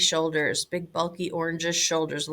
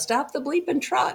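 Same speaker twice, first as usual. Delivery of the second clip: high, urgent yell; 9 semitones higher than usual. Recounting spotting something big by the woods from the truck: retelling a yell. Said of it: "And I yelled out".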